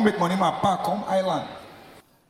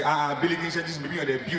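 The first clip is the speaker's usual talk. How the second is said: usual speaking voice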